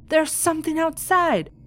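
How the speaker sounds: put-on alarmed scream, shrill and very high. Reading out a woman's story of a scare at home, retelling a scream. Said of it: "I went through the house screaming".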